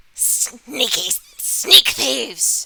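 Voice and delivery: very loud, shrill, hissing witch voice. Game master voicing a character who turns toward a player, hissing. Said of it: "she kind of hisses at you and is all like".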